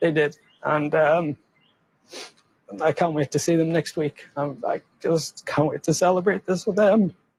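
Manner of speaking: crying while talking. Speaking of people who made sacrifices for him, crying while talking. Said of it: "Let the guy have his cry".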